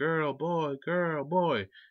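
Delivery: mock very slow, high, drawn-out panicked yelling. Retelling a movie scene where a panicking mother shouts: imitating panicked yelling. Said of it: "she panics, starts yelling".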